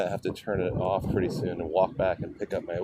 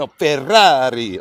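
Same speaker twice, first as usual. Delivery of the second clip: put-on Italian pronunciation, higher and louder; 7 semitones higher, 11 dB louder than usual. Retelling a correction from an Italian friend: imitating Fabio. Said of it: "this Italian dude that I know. He's like".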